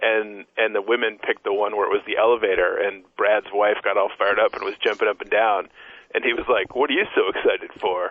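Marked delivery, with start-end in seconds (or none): 6.7-8.1 put-on condescending voice. Retelling a reaction to someone jumping up and down: imitating T J Lavin, condescending.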